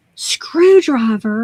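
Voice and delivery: screamed loudly. Retelling a customer's reaction, imitating someone screaming. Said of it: "She literally screamed at me and said".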